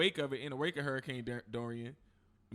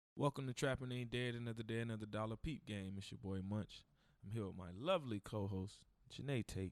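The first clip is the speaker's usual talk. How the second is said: soft radio-announcer voice; 3 semitones lower, 7 dB quieter than usual. Host opening the show and introducing his co-host, in a radio voice. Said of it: "Look at you with the radio voice".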